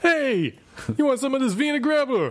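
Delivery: very high, attempted New York accent. Asked to do an accent, the speaker tries a New York accent. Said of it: "I was going for New York".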